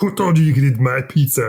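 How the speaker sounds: bad, put-on scolding voice. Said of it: "That was a terrible im-".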